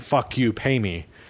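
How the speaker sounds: plain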